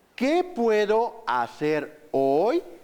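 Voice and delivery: playful, rocking lilt swinging up and down through the question. Spanish lesson on voice intonation, repeating a question with swinging question intonation. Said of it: "Es como un pequeño columpio que vamos haciendo jugando con la voz".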